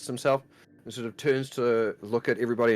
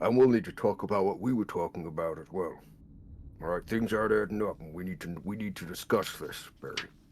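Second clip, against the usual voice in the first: very hushed, quiet, low murmur; 4 semitones lower, 4 dB quieter than usual. A character leans forward while everyone focuses on the others, speaking very quietly. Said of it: "lean forward just very quietly".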